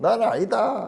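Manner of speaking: very high-pitched Gyeongsang regional accent delivery. Showing how a Gyeongsang person would say it: Gyeongsang dialect. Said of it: "우리 경상도 사람 같으면 뭐라 카노?".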